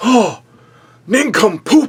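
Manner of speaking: acted, very high-pitched, loud and angry. Retelling how a wrestler shouts as the camera cuts out: imitating Tony Atlas angry. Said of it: "Tony Atlas is so angry".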